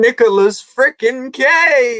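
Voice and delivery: very high, shrill, frenzied scream, one word drawn out. Retelling a character's classroom freak-out: imitating someone screaming. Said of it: "He's just screaming".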